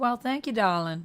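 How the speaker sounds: put-on Georgia Southern drawl. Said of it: "I sound like a Georgian peach".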